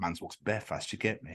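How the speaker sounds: quiet low whisper. Quoting what a man said to them, retelling a whispered line. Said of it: "all I heard it was just whispered".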